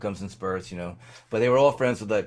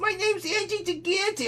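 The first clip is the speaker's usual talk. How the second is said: very high, slow, squeaky voice. Imitating a very tall schoolmate's voice: imitating Angie's voice. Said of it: "he had a voice like this".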